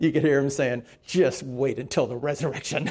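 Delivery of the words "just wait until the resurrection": soft mutter under the breath, as an aside. Storyteller quotes a sweating man carrying a cross, retelling muttering under breath. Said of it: "under his breath".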